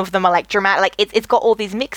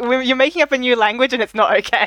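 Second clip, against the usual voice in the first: ordinary delivery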